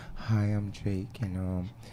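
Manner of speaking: put-on soft light voice. Imitating the guest introducing himself: imitating Jake talking soft. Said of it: "Jake like to talk all soft".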